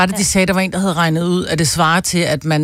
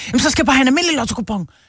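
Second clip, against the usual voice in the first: put-on manic, frantic voice, higher and faster; 7 semitones higher than usual. Retelling a man at a new cashier's lotto counter: imitating a manic customer. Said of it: "han var nærmest sådan helt manisk".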